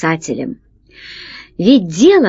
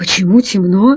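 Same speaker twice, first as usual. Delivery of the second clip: ordinary delivery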